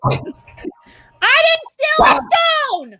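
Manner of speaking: loud, very high, drawn-out shout. Offering to whisper a secret in character, then saying it as a loud shout.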